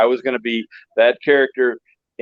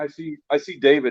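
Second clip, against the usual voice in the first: ordinary delivery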